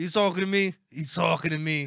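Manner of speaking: very loud, shoddy Italian New York accent. Showing what people say in New York, in a shitty Italian New York accent. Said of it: "Italian New York accent".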